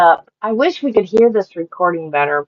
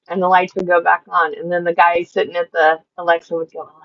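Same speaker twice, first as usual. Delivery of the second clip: ordinary talk, nothing marked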